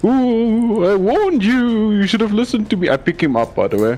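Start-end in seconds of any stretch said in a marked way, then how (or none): 0.0-2.9 silly, high ghost voice with drawn-out ooh. Game master voicing a ghost on a player's turn, in ghost voice. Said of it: "ghost voice again".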